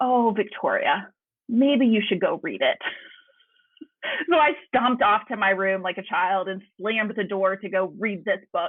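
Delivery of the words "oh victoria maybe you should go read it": kindly, warm, kind-toned voice. Retelling what a woman said to her in reply, imitating a kind voice. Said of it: "such kindness in her face and in her voice".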